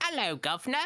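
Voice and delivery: put-on London Cockney street accent. Explaining a cockney accent to another speaker: cockney accent demo. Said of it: "it's kind of like a".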